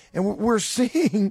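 slow delivery, laughing while talking. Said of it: "pardon me for laughing about this".

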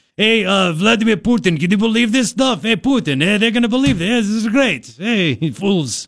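strong, leaned-into put-on Russian accent. Acting out someone addressing Vladimir Putin, sounding just like Boris. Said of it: "You sound just like Boris".

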